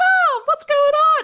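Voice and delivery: put-on very high-pitched, absurdly high, loud little boy voice. Teasing Nick about his childhood voice, imitating ten-year-old Nick. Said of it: "had an absurdly high-pitched voice".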